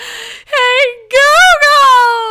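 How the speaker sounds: shrill, very high, very loud, panicked sobbing scream. Picturing the listener in their kitchen calling for help, the speaker is imitating panicked screaming and sobbing. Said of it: "I could just see you screaming in your kitchen, sobbing".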